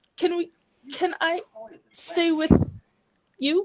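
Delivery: bashful, halting, coy and flustered. Voicing a character who asks to stay with someone: coy, flustered. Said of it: "realizing how coy she's being".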